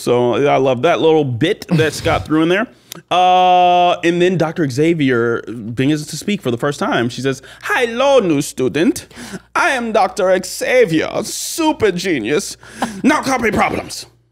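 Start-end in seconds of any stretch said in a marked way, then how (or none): 7.6-14.0 put-on German accent, spoken slowly. Acting out Doctor Xavier speaking for the first time: German-sounding Doctor Xavier accent. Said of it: "That was German, but I like it".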